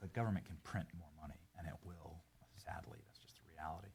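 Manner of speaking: low, hushed half-whisper all the way through. A man in a clip the others react to, half-whispering. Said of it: "why is he like whispering?".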